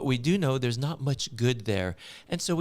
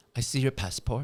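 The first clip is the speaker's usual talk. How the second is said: imitated French accent. Retelling a shop clerk asking for a passport: imitating a French accent. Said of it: "they ask us in their French accent".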